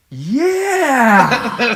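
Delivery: put-on very high, loud, gushing, drawn-out eager yeah. Retelling a friend's reply to the driver, imitating an enthusiastic yeah. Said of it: "an enthusiastic".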